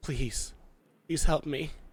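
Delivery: gentle voice. A narrator voicing a creature pulled forward by its cloak, soft voice. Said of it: "you hear a soft voice say".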